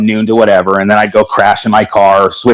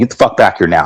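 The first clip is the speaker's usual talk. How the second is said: mock-angry voice, lower pitch; 2 semitones lower than usual. Retelling how a man who rarely got upset spoke: retelling his angry order. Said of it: "the way that he spoke to me".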